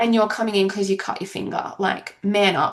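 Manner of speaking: ordinary talk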